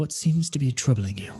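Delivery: private, confidential manner. Voicing a figure at a temple, speaking apart from others: hushed tones. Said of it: "he kind of in hushed tones".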